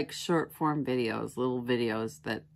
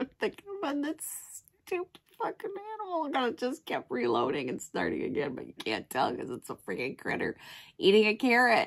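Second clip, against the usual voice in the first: pitched way up, giggling through words; 11 semitones higher than usual. Recalling a video of a hamster eating a carrot, laughing while talking. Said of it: "It hurts to laugh".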